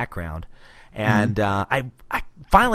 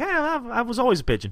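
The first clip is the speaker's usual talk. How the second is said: mock-nonchalant casual tone, much higher pitch; 14 semitones higher than usual. Retelling a story about what someone said, imitating Pete's nonchalant tone. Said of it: "just the way he said it".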